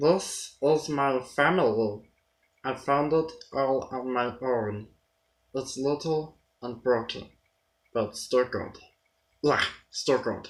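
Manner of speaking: creature voice with hissing, hissed h sounds. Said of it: "the voice of a blue character ... when you're doing the H sound, you're kind of doing a hiss".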